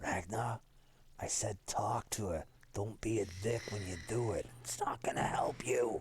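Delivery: hushed whisper. Speaking in character to ragnar during play, whispering. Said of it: "Like whisper to Ragnar".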